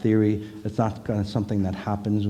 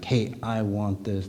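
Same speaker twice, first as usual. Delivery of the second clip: put-on, mock-aggressive forceful tone. Describing how a woman stood her ground calmly, the speaker demonstrates a mock-aggressive demand.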